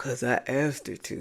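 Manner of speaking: deep voice impression. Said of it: "He got some deep voice".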